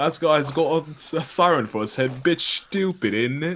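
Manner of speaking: very high, loud, shrill put-on British accent. Quoting a meme picture, as british people would say it: british accent. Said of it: "British people be like".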